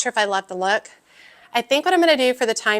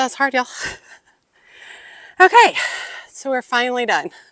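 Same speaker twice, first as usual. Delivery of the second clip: winded, out of breath; 3 semitones higher than usual. Just finished something hard, addressing y'all, out of breath. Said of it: "I'm out of breath".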